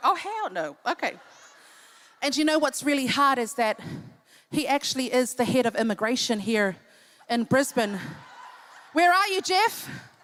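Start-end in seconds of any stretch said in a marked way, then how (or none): 0.0-0.8 acted-out, appalled, horrified tone. Acting out the single guys in the audience: imitating single guys refusing. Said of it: "All the single guys are like".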